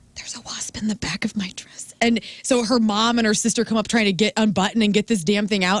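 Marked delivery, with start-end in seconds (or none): 0.1-1.9 hushed whisper, kept low, composed and held together. Retelling what a bride said in the middle of her vows: imitating a whisper. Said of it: "she starts whispering".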